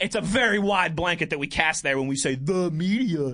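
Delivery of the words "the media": put-on taunting, mocking cartoonish meme voice. In a casual conversation, the speaker says a phrase in a mocking SpongeBob meme voice. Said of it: "in my best SpongeBob meme voice".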